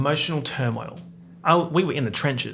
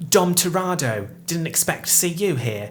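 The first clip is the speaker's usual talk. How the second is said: grating, distressing put-on Cockney accent; 3 semitones higher than usual. Retelling Helen Mirren's part in a movie, greet Dom Toretto in Helen Mirren's distressing Cockney accent. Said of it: "with a distressing Cockney accent".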